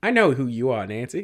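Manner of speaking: put-on old Hollywood transatlantic accent. Describing how a woman talks, imitating a 1920s transatlantic accent. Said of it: "she talks like this".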